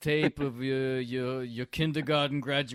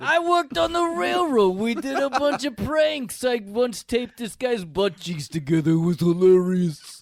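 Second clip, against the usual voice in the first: put-on loud, high Jersey accent; 8 semitones higher, 6 dB louder than usual. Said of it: "Jersey thing".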